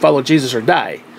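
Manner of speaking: usual speaking voice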